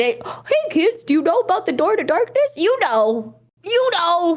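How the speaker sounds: high cartoon mouse voice. Trying a hard impression after being asked and getting Goofy instead, Mickey voice. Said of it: "Mickey will show".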